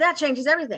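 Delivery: ordinary talk, nothing marked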